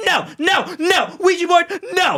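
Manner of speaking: play-acted screaming, very high, drawn-out. Retelling a movie scene where a character refuses a Ouija board: imitating someone screaming. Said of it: "she was screaming at fucking Danny".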